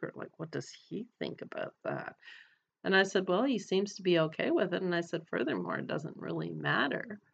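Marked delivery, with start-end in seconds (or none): 0.4-2.2 low, hushed whisper with a secretive tone. Retelling a woman's question about the speaker's husband, in a low secretive whisper. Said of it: "she said it in a low whisper, like it was a dirty little secret".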